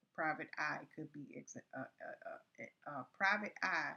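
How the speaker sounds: stuttering, repeating uh, uh. Speaker working through an idea out loud, stuttering. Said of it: "I don't know why I'm stuttering".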